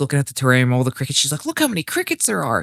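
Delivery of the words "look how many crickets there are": mock thrilled, eager, excited, high-pitched. Retelling her words while looking at the crickets: imitating her excitement. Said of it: "she's all excited".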